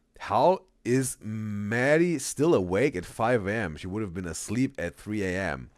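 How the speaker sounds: usual speaking voice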